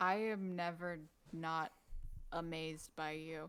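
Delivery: very slow, murmured under the breath. Looking around and taking everything in, a character speaks to another under her breath. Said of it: "almost just kind of under her breath".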